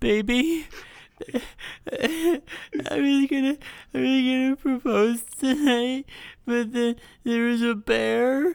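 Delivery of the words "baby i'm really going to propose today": fake crying, slower. Playing a timed story game, the speaker starts the story on the clock: fake crying. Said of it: "15 seconds crying at the top".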